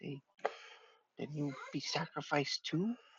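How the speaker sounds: hushed voice. A character looks at the listener and asks them something, in a lowered voice. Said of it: "kind of like lowers his voice".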